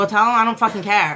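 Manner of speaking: plain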